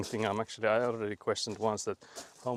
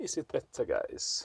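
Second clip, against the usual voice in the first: put-on, mock Swedish accent; 3 semitones higher, 5 dB quieter than usual. Speaking to viewers, repeating the question on purpose in a Swedish accent. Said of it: "Swedish accent unlocked".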